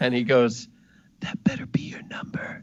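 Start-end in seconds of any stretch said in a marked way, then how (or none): 1.2-2.6 close-in hushed secretive whisper. Voicing a character who slips a note into a hand: whispering into someone's ear.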